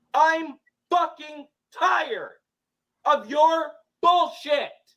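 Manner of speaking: very high, loud, angry, full-on yelling. Mid-argument with Madison, the speaker announces it and starts yelling. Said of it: "This is me fucking yelling".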